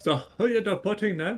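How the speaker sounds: bad put-on Mexican accent. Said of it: "I don't even know how to do a Mexican accent".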